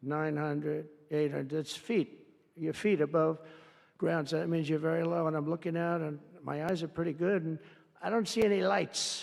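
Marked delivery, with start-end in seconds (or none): 0.0-1.6 put-on automated computer voice. Sitting up with the pilots, the speaker imitates the computer calling out height, computer voice. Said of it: "I call it the computer voice".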